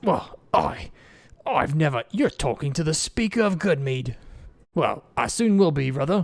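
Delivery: slow, huffing, sputtering, indignant. Voicing a character who huffs at a player's accusation: huffing indignantly. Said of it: "And he kind of huffs".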